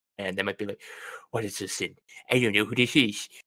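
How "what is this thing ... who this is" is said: put-on nerdy, puzzled, weird voice. Imitating a stranger confused by the voice modulator: weird nerd voice. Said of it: "I developed into a weird nerd voice there".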